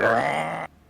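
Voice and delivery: short, snarled sound like something demonic. Playing a character snarling in a foe's face: demonic snarl. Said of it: "snarling at him".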